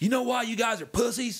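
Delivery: needling, challenging coach voice. Recalling the man who recruited them: imitating the coach's voice. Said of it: "I'm gonna try to get his voice right".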